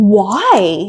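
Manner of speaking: play-acted dumbfounded, baffled, drawn-out delivery. Retelling a driver's radio question about his tires: imitating Max sounding perplexed. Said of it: "genuinely so perplexed".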